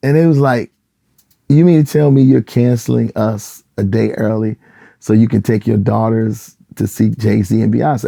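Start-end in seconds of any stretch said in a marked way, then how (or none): none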